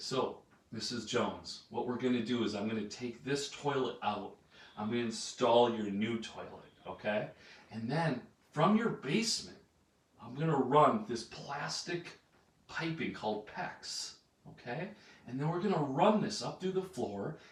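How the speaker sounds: soft, gentle, slowed-down, unhurried delivery. Showing how to explain a job to a ninety-year-old lady, softened slowed-down voice. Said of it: "See how I'm softening my voice and I'm slowing down?".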